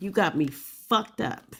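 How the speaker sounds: forceful delivery. Answering a comment about telling the enemy: said hard. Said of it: "Why you gotta say it so hard like that".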